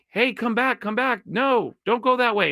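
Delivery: high, mild mock yell, called out.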